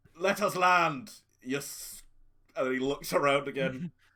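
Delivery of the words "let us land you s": put-on pirate voice, pitched high. Answering a radio call as a fake pirate captain: put-on pirate voice.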